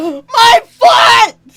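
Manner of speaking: slight yell. Voicing a bystander hit by a thrown knife: slight yell. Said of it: "in a slight yell".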